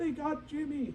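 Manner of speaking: high-pitched mock dinosaur yell.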